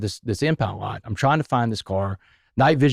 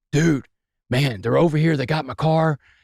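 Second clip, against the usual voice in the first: mock alarmed, frantic, panicked voice, pitched up; 5 semitones higher than usual. Retelling a man calling him up, imitating panic.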